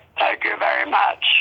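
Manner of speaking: woman speaking in a masculine-sounding voice. Retelling meeting a woman in an elevator, imitating her manly voice. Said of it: "she's got like this manly voice".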